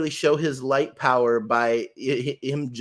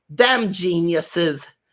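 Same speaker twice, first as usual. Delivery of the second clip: whiny put-on cartoon voice, higher pitched; 5 semitones higher, 4 dB louder than usual. Quoting a character's line in a whiny York voice like Harley Quinn. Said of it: "Harley Quinn's voice from Batman the Animated Series for York".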